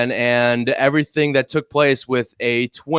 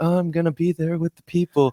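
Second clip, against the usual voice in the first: higher, softer, sheepish voice. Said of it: "the most sheepish I've heard you sound".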